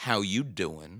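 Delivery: flirty, pickup-line style delivery. Retelling a greeting to a writer at a signing line: Joey Tribbiani voice. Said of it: "I gave you my best Joey Tribbiani".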